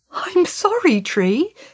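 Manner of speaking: startled, caught off guard. Tom answers the groaning tree he just cut into, startled. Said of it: "said Tom, startled".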